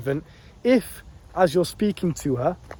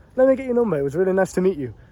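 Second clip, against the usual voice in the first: very confident, self-assured, assured as if agreed; 3 semitones higher than usual. Speaker shows viewers how to ask a girl for her number: very confident. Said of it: "ask it in a very confident".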